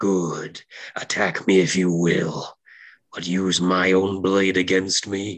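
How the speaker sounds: half-whispered voice. Narrating a game scene, the darkness speaks in the player's head in a half-whisper. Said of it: "you hear a whisper channeling in your head".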